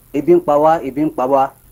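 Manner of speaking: ordinary talk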